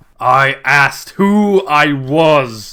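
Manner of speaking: slow, loud, booming, arrogant genie voice.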